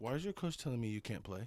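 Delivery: mock-tearful, put-on crying voice. Retelling his mother crying to him after the coach's call, imitating mom crying. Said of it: "she's like crying to me".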